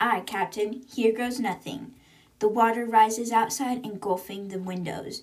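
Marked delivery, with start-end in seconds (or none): none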